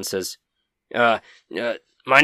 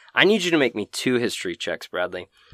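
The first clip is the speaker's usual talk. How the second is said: ordinary talk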